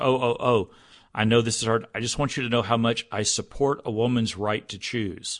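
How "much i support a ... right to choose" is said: ordinary talk, nothing marked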